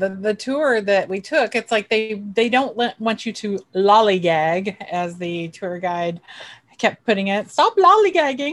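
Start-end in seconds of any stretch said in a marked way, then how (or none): 7.5-8.5 bad put-on English accent, much higher, louder. Quoting the tour guide from a tour they took, in a bad English accent. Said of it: "I really apologize for my English accent".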